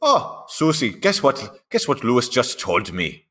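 fake Austrian accent, poorly done. Acting out an imagined porch scene, in a mock austrian accent. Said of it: "my Austrian accent".

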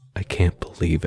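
mock muttering in disbelief. Retelling a man's reaction on being told he was fired: retelling a disbelieving mutter. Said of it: "smirked and muttered".

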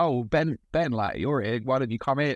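play-acted shout, calling out as if through a wall. Retelling being called in from outside the gym: imitating someone shouting. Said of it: "he shouted out".

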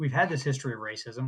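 ordinary talk

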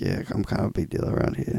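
mock intimate, sultry voice. Imitating a friend greeting a female artist in the studio: bedroom voice. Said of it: "I put on the bedroom voice".

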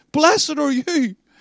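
fervent worked-up voice. Preaching and quoting Jesus's blessing to the congregation: carried away. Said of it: "I'm getting a bit carried away".

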